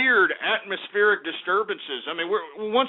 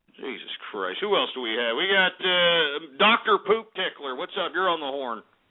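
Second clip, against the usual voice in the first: plain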